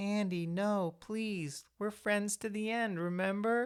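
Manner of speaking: very high, tiny, sweet little doll voice. Retelling the moment Chucky speaks to Andy, in Chucky's little doll voice. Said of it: "he does the little the doll voice".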